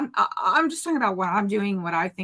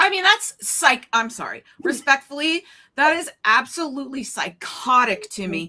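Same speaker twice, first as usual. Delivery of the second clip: raised voice getting louder, loud high-pitched outburst; 5 semitones higher, 4 dB louder than usual. In a heated conversation about a claim, one speaker is getting loud. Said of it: "sorry, I'm getting loud".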